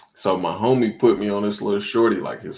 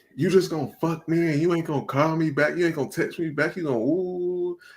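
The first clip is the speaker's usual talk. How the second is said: high-pitched, put-on drunken, angry yelling; 8 semitones higher than usual. Retelling what a woman yelled at him in the club, imitating a woman yelling. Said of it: "like yelling".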